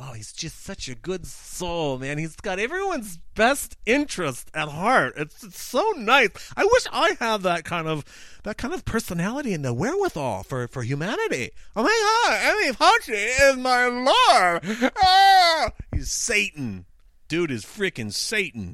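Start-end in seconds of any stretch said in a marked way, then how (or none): 0.0-14.9 high, sing-song, odd, uncomfortable put-on weirdo voice. Mocking people who think fauci is a good soul: uncomfortable weirdo impression. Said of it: "that was an uncomfortable impression".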